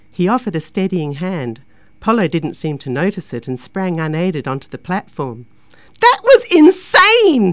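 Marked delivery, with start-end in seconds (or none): 6.0-7.6 thrilled shriek, very high and very loud. Getting off the ride, [name] screeches her reaction. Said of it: "she screeched".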